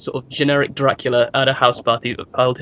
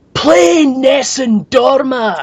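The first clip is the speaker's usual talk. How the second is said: mock shrill, very high, loud shout; 11 semitones higher, 5 dB louder than usual. Telling a concert story, quoting a man in the audience: retelling a shout. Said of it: "a guy stands up and shouts".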